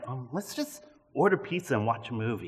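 very low-key, quiet, easygoing, casual offhand tone. Retelling a remark to a wife about plans for tonight: retelling a quiet, casual remark. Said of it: "I'm saying it really casual, very quietly".

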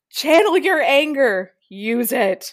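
intensifying, pressing, loud, intense delivery. Reading a line again when a partner asks to hear it, more intense. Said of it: "I had to say that more intense each time".

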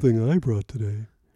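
mocking show-off tone. Mocking another speaker's line: imitating a peacocking tone. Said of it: "'cause that's your tone".

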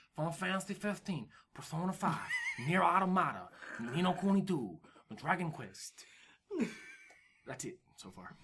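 soft adopted Japanese accent. Listing Japanese game titles on a gaming podcast, in a put-on accent. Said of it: "I don't know why I adapted that accent".

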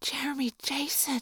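awestruck whisper. Reading a story aloud, a character sees someone famous: awestruck whisper. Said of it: "Cassie whisper in awestruck tones".

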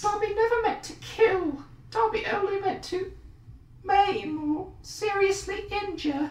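squeaky elf voice, very high. Urged by the other speaker to do the voice while quoting; Dobby voice. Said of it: "do the voice".

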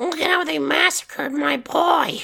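raspy, very high cartoon mom voice. Recounting what a teenager said, putting on a Marge Simpson voice. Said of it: "not the worst Marge Simpson voice".

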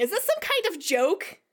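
full-on put-on shouting. Playing a character who marches to the window, in-character yelling. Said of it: "I start yelling".

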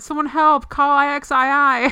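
high, loud crying-out voice. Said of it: "the kid trapped under the boulder, uh, said".

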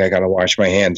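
ordinary delivery

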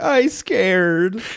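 put-on, high, tearful, blubbering sobbing voice. Retelling a scene where Bender breaks down: imitating Bender crying. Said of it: "he just breaks down crying".

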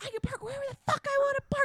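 mock shrill, very high, furious raging yell. Retelling a driver yelling at a security guard: imitating a driver screaming. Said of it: "screaming in his face".

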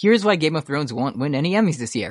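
ordinary talk, nothing marked

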